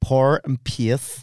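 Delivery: Northern Irish vowels on "power" and "pace". Saying the only two words they can manage, Northern Irish accent. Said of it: "The only two words I can say in Northern Irish accent is power and pace".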